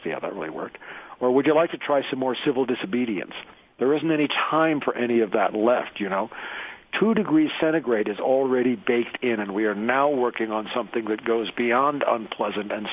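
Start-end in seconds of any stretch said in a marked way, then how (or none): none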